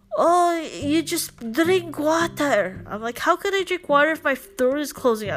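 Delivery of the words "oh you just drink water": really bad, slow, put-on Filipino accent. Retelling what the dad said about the throat closing up, in a really bad Filipino accent. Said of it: "really bad Filipino accent".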